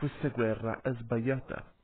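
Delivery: plain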